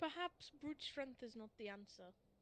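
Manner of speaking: sighing, muttered remark. A role-play character steps back from the wall and looks at the group, muttering. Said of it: "and he just mutters".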